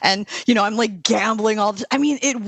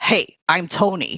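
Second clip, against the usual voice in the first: put-on New York accent; 3 semitones lower than usual. Retelling how a group of men introduced themselves, in a new york accent. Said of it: "New York Tonys".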